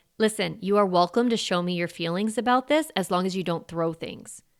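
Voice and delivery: firm, steady voice. Showing a parent how to set a limit with a child: firm voice. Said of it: "listen to how firm my voice got there".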